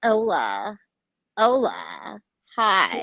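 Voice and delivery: exaggerated, swooping young American woman accent.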